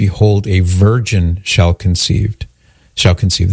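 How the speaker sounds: ordinary talk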